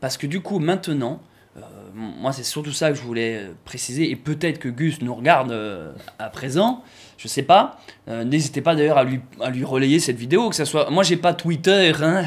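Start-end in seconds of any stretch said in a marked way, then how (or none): 10.9-12.3 fake Belgian accent, higher. Joking about not having Twitter: put-on Belgian accent. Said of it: "Je prends l'accent belge d'un coup".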